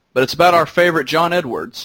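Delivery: normal talking voice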